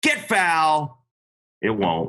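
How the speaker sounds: defeated announcer voice, slow, swooping, sad puppy-dog hopefulness. Imitating Hawk after an opponent hits the ball down the line, do a mock-sad Hawk impression. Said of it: "I just got to do it in the right tone of voice".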